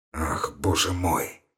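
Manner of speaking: very low, very quiet groan of revulsion. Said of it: "с отвращением простонал Ромашов".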